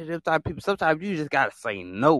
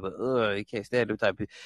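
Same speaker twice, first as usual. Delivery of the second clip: ordinary talk, nothing marked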